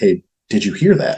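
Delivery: voiced stage whisper. Retelling leaning over to a companion in the dark: imitating own past half-whisper. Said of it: "almost, like, whisper to him".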